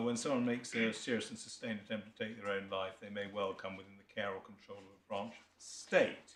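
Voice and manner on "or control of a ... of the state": normal talking voice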